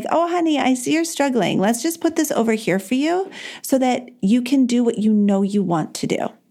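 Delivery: kind, really sweet parental tone. Showing how she talks kindly to herself: sweet parent voice. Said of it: "I'm like a really sweet parent being like".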